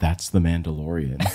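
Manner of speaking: low, hushed half-whisper under the breath. In the Star Wars area at Disneyland, half-whispering to her companion. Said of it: "I just whispered to her".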